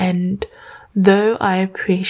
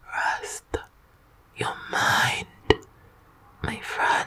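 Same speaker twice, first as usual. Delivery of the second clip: very soft, breathy, hushed, lulling whisper. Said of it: "let's go a little quieter".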